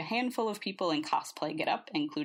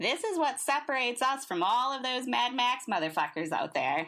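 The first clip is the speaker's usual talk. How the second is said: voice flips up into high, sneering, mocking falsetto; 7 semitones higher than usual. Ash mocks what Nix said, in a high falsetto mimicking Nix. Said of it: "In a high falsetto, mimicking, mimicking Nix".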